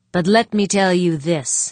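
ordinary delivery, nothing marked

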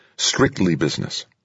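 ordinary delivery

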